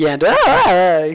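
imitated voice crack. Imitating a glitchy moment in another speaker's voice: imitating Anna's voice crack. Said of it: "I'm just making a voice crack sound".

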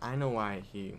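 ordinary delivery

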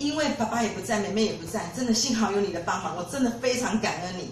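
ordinary delivery

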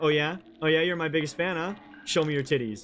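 usual speaking voice

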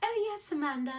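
high put-on British accent. Quoting a woman she talked with on the phone: imitating a british accent. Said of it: "in her like beautiful British voice".

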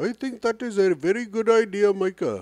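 high-pitched fake British accent. Imagining a reply to their own idea, the speaker does a Deepak Chopra impression. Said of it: "That's Deepak Chopra".

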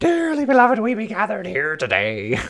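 loud, very high pirate voice. Voicing a game character as Captain Barbossa: Captain Barbossa voice. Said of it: "Donna pulls a Captain Barbosa".

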